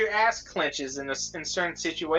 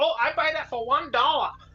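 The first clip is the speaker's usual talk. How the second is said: over-the-top exaggerated Chinese accent, pitched up; 10 semitones higher than usual. Retelling hearing someone on a stream: imitating a super crazy chinese accent. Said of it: "a super crazy Chinese accent".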